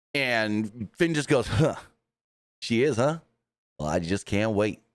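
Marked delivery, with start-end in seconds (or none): 1.4-4.7 words spoken through a grin. Retelling his reply with a big grin: imitating someone grinning. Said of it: "he had a big old grin on his face".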